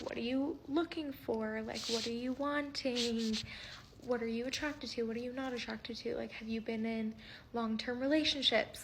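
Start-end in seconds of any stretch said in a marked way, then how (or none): none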